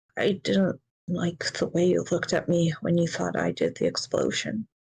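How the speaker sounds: muttering under breath. In a roleplay, a bedridden suspect answers the one who suspected him, muttering. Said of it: "He kind of mutters".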